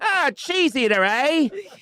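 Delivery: Victorian-style voice, way up high and slow. Imitating a woman reacting to seeing him undressed: Dickensian voice. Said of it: "That's very Dickens".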